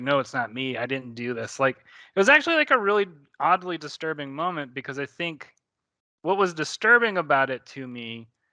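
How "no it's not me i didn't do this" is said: mock pleading voice. Retelling a woman's denial in a disturbing moment: retelling a pleading denial. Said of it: "she's like pleading like".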